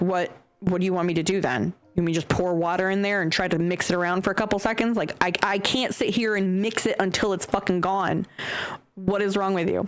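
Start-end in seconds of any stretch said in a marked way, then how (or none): none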